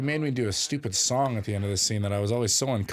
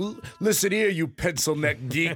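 mock threatening wrestler voice, higher; 6 semitones higher than usual. Imitating a bodybuilder's threats, like a nineteen eighties wrestler. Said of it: "nineteen eighties wrestler".

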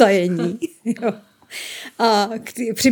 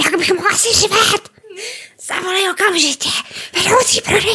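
mock shouting, pitched much higher; 10 semitones higher than usual. Retelling what a man yelled at the store, imitating his shouting. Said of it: "neřvi tady".

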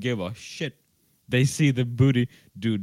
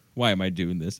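completely terrified, put-on frightened voice; 5 semitones lower than usual. Retelling a show scene, the woman on the other side speaks: imitating a terrified lady. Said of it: "completely terrified lady".

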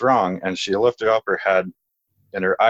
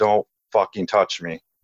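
put-on dark, heavy, graspy voice. Retelling what a woman said in a voice not her own, in a dark, heavy, graspy voice. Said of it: "a dark, like, heavy, you know, graspy voice".

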